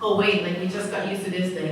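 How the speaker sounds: usual speaking voice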